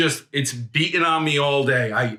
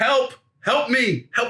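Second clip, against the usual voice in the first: put-on loud shouted cries, repeated over and over; 9 semitones higher than usual. Speaker recounts calling out in the mall, retelling yelling for help. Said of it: "While I'm yelling".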